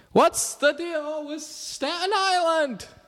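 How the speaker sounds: very high comic yell with big swooping pitch. Doing a Jerry Seinfeld impression of a podcast title: yelling Jerry Seinfeld impression. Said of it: "Jerry Seinfeld impression if you yell like this".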